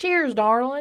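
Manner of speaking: accent of the American South. Imagining how people in the south would toast, in a southern accent. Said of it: "Maybe with a southern accent".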